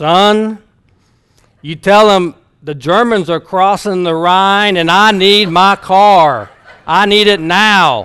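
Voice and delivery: loud, booming, impatient voice, "son" drawn out. Retelling Dr. Long demanding his car at a rental place, booming voice. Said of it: "he starts in that booming voice".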